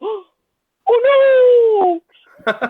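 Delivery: very high, loud, put-on startled surprise. Retelling how she reacts on hearing thunder, imitating fake surprise. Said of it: "this like fake surprise face where she goes".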